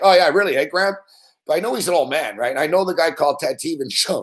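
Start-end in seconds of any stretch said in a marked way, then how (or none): 0.0-0.9 defensive-sounding voice. Retelling a reply to a caller who insulted the show: retelling own defensive tone. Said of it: "I sort of get defensive".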